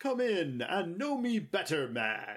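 giant ghost voice. Retelling a giant Muppet ghost waking him up, in a booming voice. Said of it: "woken up by this booming voice saying".

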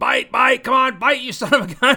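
shrill, high, full-volume booming shout. Retelling how he yelled at a fishing video in his home studio, retelling yelling at a screen. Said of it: "yelling at the screen".

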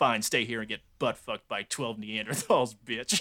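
put-on low mumbling. Recounting a movie scene where he walks off after his girlfriend refuses, imitating James Woods muttering. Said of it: "muttering like".

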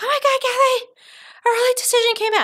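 play-acted, very high, rushed, frantic panic. Retelling a senior's phone call: imitating a student freaking out. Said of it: "freaking out".

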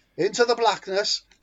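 put-on Welsh accent. Imitating the game's miners' sound file line: Welsh accent. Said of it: "They're all Welsh".

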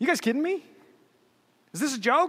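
scornful, sneering, mocking jeer. Retelling how Goliath looks his opponent over before the fight, mock-sneering as Goliath. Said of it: "sneering at him".

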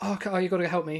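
mock spluttering with shaking voice. Retelling how callers reacted when told to ask for help, imitating spluttering and shaking. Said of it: "spluttering and shaking".

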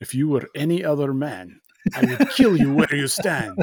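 bad, put-on, terrible Russian accent with swooping pitch. Recapping a scene, the speaker voices what Chekhov was thinking: terrible Chekhov accent. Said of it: "That's a terrible accent".

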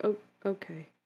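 gentle, courteous high voice.

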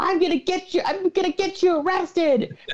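put-on high yelling. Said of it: "yelling at him, like".

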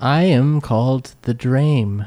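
voice of a speaking tree. In an improvised scene, a performer playing a tree introduces itself in a talking tree voice. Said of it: "I'm just doing the same voice".

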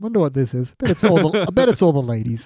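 mock tone, words broken up by snickers. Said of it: "her just snickering on that one".

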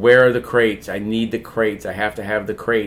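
ordinary delivery

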